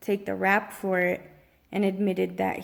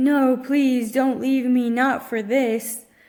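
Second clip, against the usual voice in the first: very loud, desperate, put-on pleading cry; 4 semitones higher, 8 dB louder than usual. Retelling a partner's reply when told it's over: imitating someone begging and pleading. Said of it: "he's begging and pleading".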